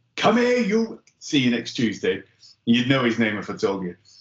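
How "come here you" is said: put-on big, thick Welsh accent. Retelling what an sf instructor said on the ranges, in a thick welsh accent. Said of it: "in his big, thick Welsh accent".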